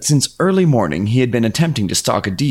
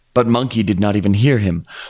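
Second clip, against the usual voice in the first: ordinary delivery, nothing marked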